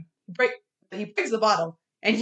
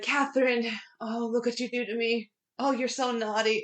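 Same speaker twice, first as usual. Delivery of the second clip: mock drunken talk, quieter; 6 dB quieter than usual. Retelling a movie scene where a drunk graveskeeper talks to his bottle: imitating a drunk man. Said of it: "drunk as per usual".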